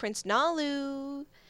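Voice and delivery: put-on high, flirty, coaxing voice, drawn out. Retelling how a character calls a prince, imitating a flirty coaxing call. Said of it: "she's trying to coax him out, 'cause she is, she's getting her flirt on".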